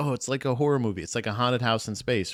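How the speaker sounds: ordinary talk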